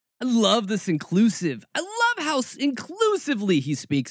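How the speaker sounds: dripping, swooping sarcastic tone. Commenting on a pastor's quoted words: really sarcastic. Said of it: "I'm speaking really damn sarcastically".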